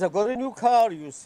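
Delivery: put-on high Welsh accent. Quoting the Welsh club secretary's habit: imitating a Welsh guy. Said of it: "a Welsh guy that's the secretary".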